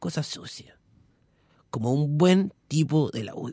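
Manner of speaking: hushed put-on voice. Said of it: "¿Por qué hablas como Merino".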